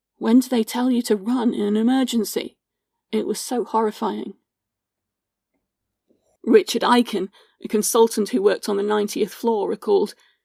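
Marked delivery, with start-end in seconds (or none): none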